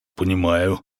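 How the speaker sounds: gruff grunting with a lustful smile. The baron, told his choice is limited, answers with a grunt. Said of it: "буркнул барон и сладострастно улыбнулся".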